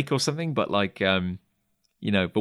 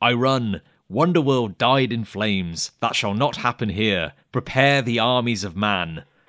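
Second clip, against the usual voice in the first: acted, terse, snappy, clipped delivery. Describing Glimmer's short, snappy statements; booming Glimmer voice. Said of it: "in a big booming voice".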